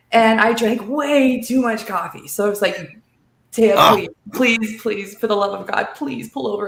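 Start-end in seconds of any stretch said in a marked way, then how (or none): 3.5-6.6 put-on, desperate, pleading voice. Retelling begging a friend driving to pull over: imitating own pleading. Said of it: "pleading, "Please."".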